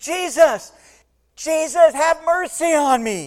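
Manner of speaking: booming, high, very loud, very slow, drawn-out outcry. Speaker retells a blind man outside Jericho crying out, acting out Bartimaeus shouting. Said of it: "He's shouting".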